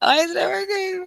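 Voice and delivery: frustrated, high, loud near-crying wail.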